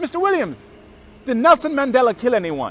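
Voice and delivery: put-on heavy Nigerian accent, very loud and high. Retell a Baptist minister questioning you at the door, in Mister Akano's thick Nigerian accent. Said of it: "He has a thick Nigerian accent".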